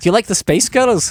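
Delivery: high-pitched, put-on American accent. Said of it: "if you say that in an American accent".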